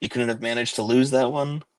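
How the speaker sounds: soft, half-whispered voice. Caliban leans over to the player, half-whispering. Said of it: "he leans over and he whispers".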